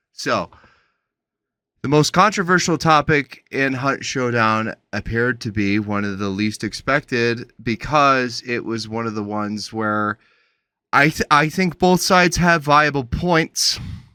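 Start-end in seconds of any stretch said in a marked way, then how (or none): none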